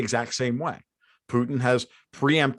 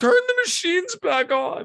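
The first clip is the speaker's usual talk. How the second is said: very high, slow, drawn-out pleading. Retelling how a rich man begs: imitating someone begging. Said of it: "beg, going".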